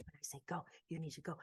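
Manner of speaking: urgent, intense, hushed whisper. Retelling how he crouched down with them, imitating an intense hyping whisper. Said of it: "he's like kind of hyping them up".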